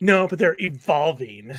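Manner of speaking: mocking condescending tone. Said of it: "Why do you say that so condescendingly?".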